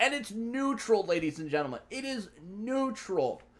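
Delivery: slightly thrilled announcer voice. Presenting a neutral card to ladies and gentlemen, slightly excited in a higher tone. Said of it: "speak in a much higher tone that's slightly excited".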